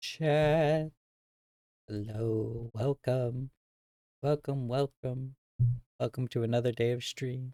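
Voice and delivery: weary, worn-out, tired, drawn-out speech. Streamer greeting chat at the start of another day of stream, tired. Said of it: "I might sound tired".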